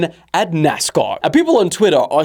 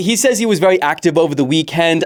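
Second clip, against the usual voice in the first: ordinary delivery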